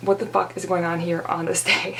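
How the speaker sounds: ordinary talk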